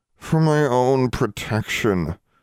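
muffled, slightly high mumble, words smothered. Alexandra answers Constance with her face pressed against the table, a muffled mumble. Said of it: "Alexandra mumbled, with her face still pressed against the table".

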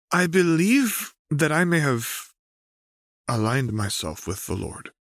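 unsure, hesitating delivery, slightly high. A narrator reads a character beginning an explanation, hesitant. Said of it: "sounding hesitant".

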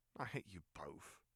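dry delivery. Reading Ron's reply to Harry and Hermione, said dryly. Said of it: "Ron said equally dryly".

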